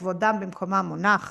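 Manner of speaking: ordinary talk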